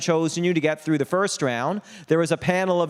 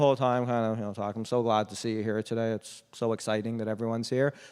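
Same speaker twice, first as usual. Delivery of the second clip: deadpan monotone, low and soft, no expression; 6 semitones lower, 7 dB quieter than usual. Talking to an audience about public speaking, the speaker shows a bad example: flat, no expression. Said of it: "There's no expression".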